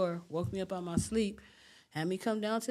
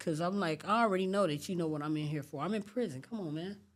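plain

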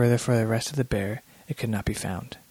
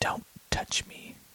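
rasping, hoarse whisper, hushed and barely voiced. A woman held in the narrator's grasp speaks to him, whispering. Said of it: "she whispered".

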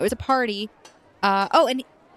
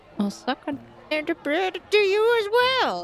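muttered under breath, much higher; 7 semitones higher than usual. Game master voicing a woman answering a player's goodbye, muttered under breath. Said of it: "She mutters under her breath".

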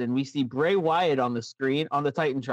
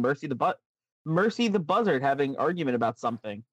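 ordinary talk

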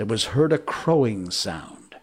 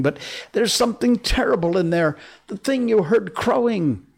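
very high voice, nearly babbling, almost gibbering; 11 semitones higher, 3 dB louder than usual. A pirate answers his captain after finding a shipmate dead, almost gibbering. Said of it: "almost gibbering".

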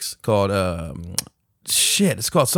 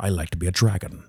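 put-on dragon voice, lower and quieter; 5 semitones lower, 4 dB quieter than usual. Joking about movies, doing a Sean Connery impression. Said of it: "With Sean Connery being the voice of the dragon".

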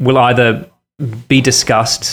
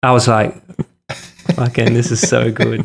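usual speaking voice

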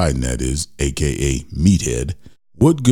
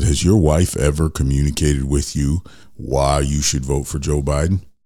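ordinary talk, nothing marked

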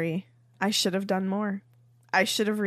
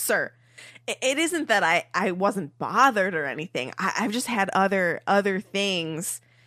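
ordinary talk

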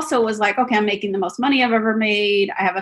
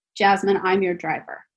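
put-on fast flat deadpan, no hint of laughter. Retelling her driver's reply to her light laugh, retelling a deadpan reply. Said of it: "deadpan, no laughter".

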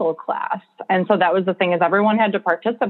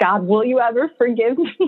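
put-on, mild, scream-like yell, played small; 4 semitones higher than usual. Retelling what she screamed after being handed a jar of fake doll parts. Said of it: "And then I just screamed".

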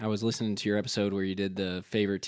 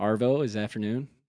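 ordinary talk, nothing marked

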